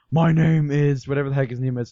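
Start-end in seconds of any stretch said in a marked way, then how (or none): 0.1-1.0 mock, imitated voice, as deep as possible. Retelling the end of a video someone watched: imitating the deepest voice ever. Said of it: "the deepest voice ever".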